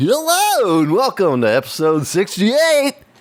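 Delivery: high, drawn-out, showy, with pizzazz and flair. Redoing the show's opening line after being asked for more: with pizzazz.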